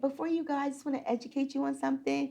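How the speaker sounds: put-on trembling voice. Retelling what was said to the roommate's mom: imitating own trembling voice. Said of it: "my voice was trembling".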